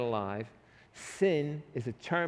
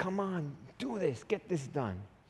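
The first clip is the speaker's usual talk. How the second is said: mock imploring, beseeching, begging, pleading tone; 4 semitones higher, 4 dB quieter than usual. Acting out a man pleading to get the room cleaned up, mock pleading. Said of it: "he's pleading".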